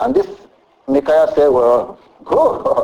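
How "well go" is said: sarcastic, mocking delivery. Retelling a man's answer to the king's question, retelling a sarcastic reply.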